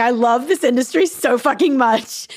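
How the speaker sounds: tearful, choked-up, near-tears, emotional voice. Speaking about people's goodness, choking up, about to cry. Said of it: "start fucking crying".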